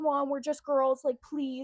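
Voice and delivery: mock frantic, freaked-out pleading voice. Retelling a traffic stop, the speaker quotes the driver pleading with the cop, imitating someone freaking out. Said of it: "she was like freaking out at him".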